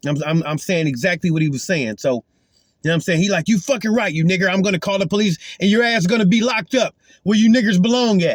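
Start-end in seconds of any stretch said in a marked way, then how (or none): 3.5-8.4 furious man's voice, angry, abusive cursing rant. Retelling what a man yelled while threatening to call the police: imitating an angry man. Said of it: "I don't even know why you so mad".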